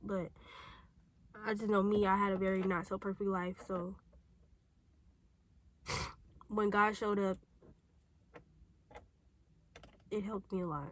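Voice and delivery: crying while talking. Speaker addressing whoever sees the video, crying while talking. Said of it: "I need to stop crying".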